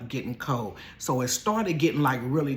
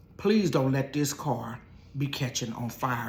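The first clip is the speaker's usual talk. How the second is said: ordinary delivery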